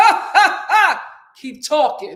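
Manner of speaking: very loud, slow, booming hearty laugh. Retelling a tense comedy show, imitating a hearty deep laugh.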